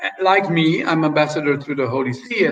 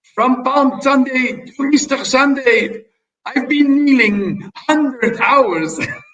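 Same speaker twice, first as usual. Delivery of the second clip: put-on French accent with pitch raised very high; 9 semitones higher, 4 dB louder than usual. Quoting a letter home from the court of Leopold the First, in a put-on French accent. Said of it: "I'm making this with a French accent".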